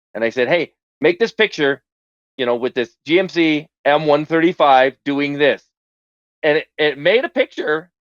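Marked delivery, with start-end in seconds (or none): none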